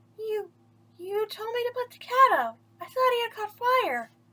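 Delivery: tiny, small, very high little voice. Reading a story aloud, Pinocchio answers Geppetto in a small voice. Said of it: "said Pinocchio in a small voice".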